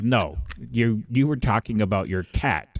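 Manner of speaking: normal talking voice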